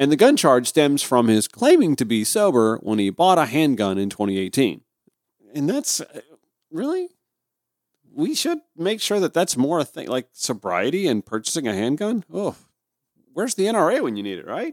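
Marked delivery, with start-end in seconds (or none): 12.3-14.7 facetious, tongue-in-cheek joking tone, pitched up. Reading a newsletter aloud, the speaker makes a facetious, joking aside. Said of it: "I'm being facetious".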